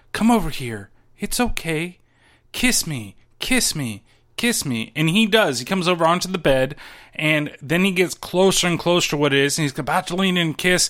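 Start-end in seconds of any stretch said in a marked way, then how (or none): 0.1-4.9 slow, drawn-out, thin, wispy coaxing voice. Retelling how Jamie Lee Curtis calls Kenny over from the corner, Jamie Lee Curtis wispy voice. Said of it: "in a very, like, wispy type voice".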